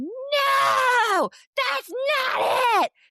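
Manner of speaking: acted toddler outburst, very high, very slow, angry. Retelling how a son erupted at his older sister: imitating a child yelling angrily. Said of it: "Just yelling at her".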